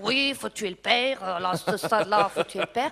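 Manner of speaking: put-on heavy Belgian accent.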